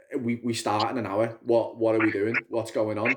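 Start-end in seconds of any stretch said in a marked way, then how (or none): none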